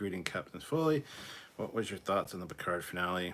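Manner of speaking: plain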